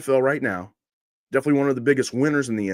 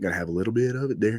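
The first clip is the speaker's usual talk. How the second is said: country accent, lower pitch; 3 semitones lower, 4 dB quieter than usual. Showing how the voice sounds after hours of country music: showing a country accent. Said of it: "hear me kinda talk like this".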